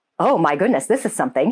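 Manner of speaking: normal talking voice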